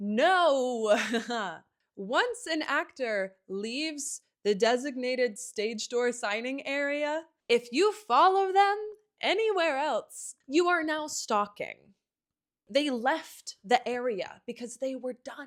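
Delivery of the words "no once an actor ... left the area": half-yelled loud rant with a long, drawn-out "no". Speaking directly to viewers, yelling. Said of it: "I know I'm kind of yelling".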